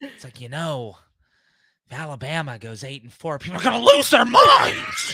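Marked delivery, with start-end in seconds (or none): 1.9-5.1 loud delivery, pitch swinging wide. Performing a requested impression about football fans: Joker impression. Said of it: "the Joker impression".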